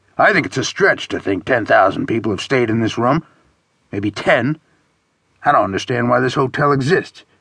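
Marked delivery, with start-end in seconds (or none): none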